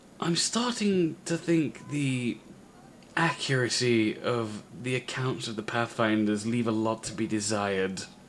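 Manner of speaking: confiding, conspiratorial just-between-us tone. A character leans in close to the listener and speaks: conspiratorial. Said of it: "says conspiratorially".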